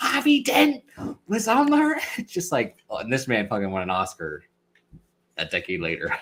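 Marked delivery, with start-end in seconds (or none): 0.0-2.0 put-on drawn-out accent drifting between American and British. Complaining about an actor's accent in those movies, the speaker does Gary Oldman's in-between accent. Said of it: "he's in between American and British".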